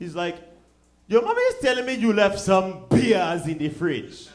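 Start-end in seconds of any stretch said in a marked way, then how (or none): 1.1-4.3 put-on thick Nigerian accent, loud and swooping. Retelling a father's voicemail: imitating father's thick nigerian accent. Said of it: "his thick-ass Nigerian accent".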